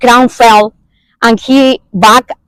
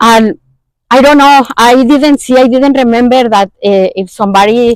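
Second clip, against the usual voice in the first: normal talking voice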